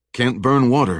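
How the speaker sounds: plain reading voice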